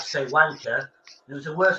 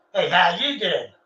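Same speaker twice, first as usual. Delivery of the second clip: put-on, horrible Brooklyn New York accent. Describing New York accents, doing a put-on Brooklyn accent. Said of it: "You go to Brooklyn".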